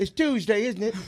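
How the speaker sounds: put-on old-fashioned period-style Victorian British accent. Trying out British phrases: imitating a Victorian-era British accent. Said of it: "like, the Victorian times when people used to speak".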